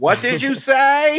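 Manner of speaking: very high, loud, very slow screaming. Recalling the agent David Lynch played: imitating a screaming agent. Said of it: "where he was always screaming".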